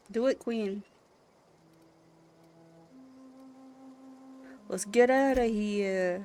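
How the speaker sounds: loud, very bad New York accent. Telling Queen to go ahead and get them out, in the worst New York accent. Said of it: "The worst New York accent you ever did hear".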